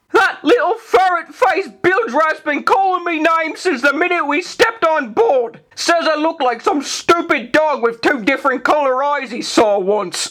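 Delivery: sneering tone pitched very high. Reading a pirate story, narrator voices Ragetti squaring up to another man, Ragetti sneering. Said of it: "Then a glint of understanding darkened his blue eye. / the lad sneered. / the lad sneered. / a ragged voice bellowed from behind the mast".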